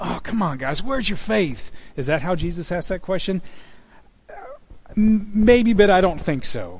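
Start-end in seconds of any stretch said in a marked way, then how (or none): 0.0-1.7 fed-up, frustrated, exasperated tone. Imagining how a question to disciples was asked, mock-frustrated exasperation. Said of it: "Is he a little frustrated with his disciples? Like".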